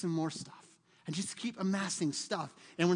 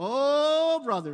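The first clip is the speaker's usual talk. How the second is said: very loud, holy-sounding, fake-pious, stretched "Oh"; 6 semitones higher, 9 dB louder than usual. Showing how to fake sounding spiritual at church: mock pious drawn-out "Oh". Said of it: "You gotta add the O's".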